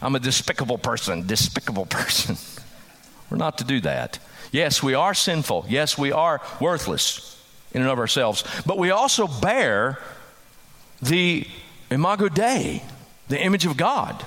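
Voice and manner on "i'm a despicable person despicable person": put-on cartoon duck lisp, much lower. Speaker showing how believers should not talk, lisping like Donald Duck. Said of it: "lisping like Donald Duck in the old cartoon".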